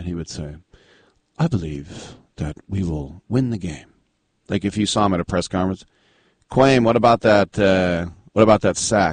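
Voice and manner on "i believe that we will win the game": put-on gentle voice, quieter. Telling how a football player would talk, imitate him in a very gentle Kwame Harris voice. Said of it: "he had this very gentle voice".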